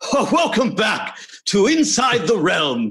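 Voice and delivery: very high, pleasant, swooping fake British accent. Demonstrating the voices they did, the speaker shifts into a put-on british voice. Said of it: "I turn into a British thing".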